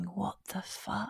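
bewildered whisper, very low, under the breath. Retelling lying in recovery after a scan: imitating own past whisper. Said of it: "just sort of whispering".

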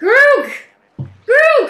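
calling out. Spotting an old friend arguing with a guard, the character calls out to someone. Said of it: "Rock will call to him".

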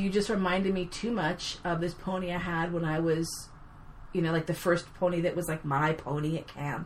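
ordinary delivery

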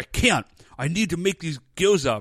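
put-on super intense tone. Retelling a character refusing his sister to make dumplings: imitating intense insistence. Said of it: "he's super intense about it".

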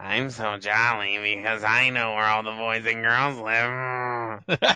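creepy put-on voice. Putting a joke in perspective, line done in a creepy put-on voice. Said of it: "let me say it like this. ... Creeper voice".

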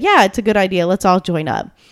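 plain

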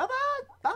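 shrill, very high cat scream. Recalling a cartoon cat version of Abbott and Costello, imitating Costello cat screaming. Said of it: "would often just scream out, like".

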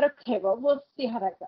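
ordinary talk

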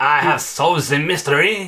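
over-the-top, big, fake French accent. Mocking a detective character from a show, big fake French accent. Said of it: "a big fake French accent going".

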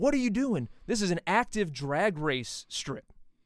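loud, high-pitched, angry shouting yell. A man stops the speaker's car in a parking lot; retelling his yelling. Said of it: "he's like yelling at me".

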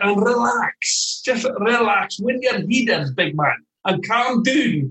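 high, slow, soothing Scottish accent.

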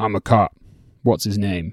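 low, deep voice from the back. Retelling what a voice from the back of the room said, in a low, deep voice. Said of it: "a low, deep voice from the back of the room that just went".

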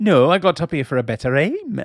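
terrible put-on Welsh accent with a swooping tune. Quoting a line from a funny scene, in a terrible Welsh accent. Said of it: "My terrible Welsh accent".

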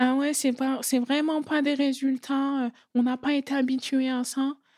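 high, put-on dopey dim-witted voice. Quoting her own interview answer, the speaker uses a put-on dumb voice. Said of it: "je prends ma voix de con".

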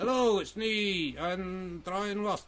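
softly spoken northern English accent. Practising ventriloquism with a dead watch, the speaker introduces the puppet: northern Brian Lost voice. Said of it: "I think he's northern at the moment".

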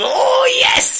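big, thrilled, very high, excited whoop. Predicting how Sean will react to a news story, imitating Sean's big excited voice. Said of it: "he's going to give me that a big excited voice that he always does".

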